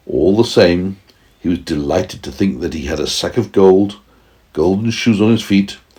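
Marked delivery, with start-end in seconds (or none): none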